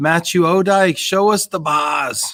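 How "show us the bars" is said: put-on unplaced Boston-ish accent. Reading a viewer's comment aloud: odd Boston-like accent. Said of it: "that was like a Boston".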